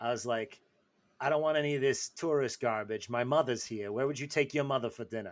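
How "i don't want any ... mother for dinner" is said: convincing put-on Roman Italian accent. Retelling what was said to a Venetian shop owner, in a perfect Roman accent. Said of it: "I said with a perfect Roman accent".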